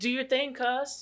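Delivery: very slow, soft, drawn-out southern drawl. Quoting how she delivered one of the worst lines: southern accent. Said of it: "she even does it with like a southern accent".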